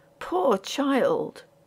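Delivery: soft murmur, half under the breath. Narrating a ghost story, a man murmurs over the scene: murmuring. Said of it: "he murmured".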